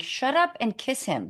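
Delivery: ordinary delivery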